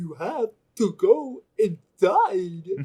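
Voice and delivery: little storybook voice, high, sing-song, slow, swooping, loud. Imagining how a line would sound spoken by the Mad Hatter. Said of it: "the Mad Hatter from Alice in Wonderland being like".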